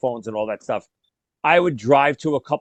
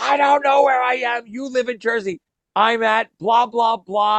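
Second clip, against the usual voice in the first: mock lost, high-pitched screaming; 10 semitones higher than usual. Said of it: "I'm screaming at him".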